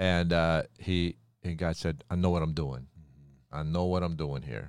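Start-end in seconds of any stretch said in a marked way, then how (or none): 2.1-4.7 put-on New York accent, lower and quieter. Retelling God talking to Moses, the speaker does God in a New York accent. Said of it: "say it with a New York accent?".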